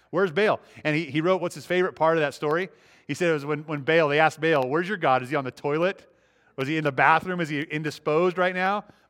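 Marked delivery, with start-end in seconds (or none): none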